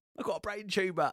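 high, put-on Cockney accent.

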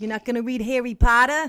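booming, loud, put-on New York accent. Imitating the man who called the other speaker a moron, in a new york accent. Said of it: "I bet he had a New York accent".

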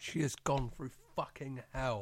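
fervent, impassioned delivery. Recapping what Sarah has gone through, sounding impassioned. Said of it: "I'm sounding really fucking impassioned".

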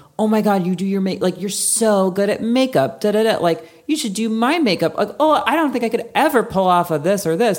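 condescending gushing voice. Retelling what women say about makeup, imitating a patronizing tone. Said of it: "patronizing way".

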